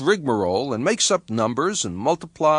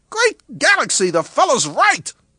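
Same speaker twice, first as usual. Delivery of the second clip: startled, loud, very high, squeaky surprised sound; 9 semitones higher, 4 dB louder than usual. General Wider stares at the numbers on his computer and speaks: surprised squeak. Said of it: "said in a surprised squeak".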